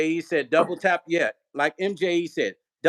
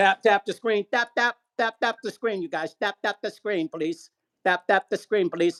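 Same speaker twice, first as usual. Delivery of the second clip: put-on Filipino accent throughout; 3 semitones higher than usual. Speaker asks the audience to tap the screen, in a Filipino accent. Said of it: "That's my Filipino accent".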